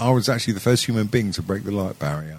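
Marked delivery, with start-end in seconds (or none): none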